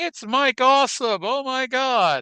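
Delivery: very high, wild, frantic announcer shriek. Retelling how the commentator reacted to the wrestler's entrance: imitating a commentator screaming. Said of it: "Tenay's just screaming".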